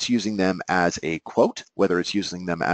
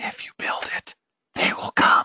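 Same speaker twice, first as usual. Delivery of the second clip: loud stage whisper, pushed to carry far. Quoting a classic movie line that is whispered across a field: loud whisper. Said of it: "I tried to whisper that loud".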